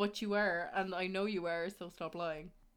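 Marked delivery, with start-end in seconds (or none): none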